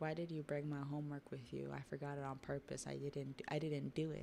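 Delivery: ordinary delivery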